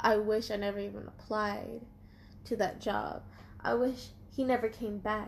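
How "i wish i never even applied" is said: ordinary talk, nothing marked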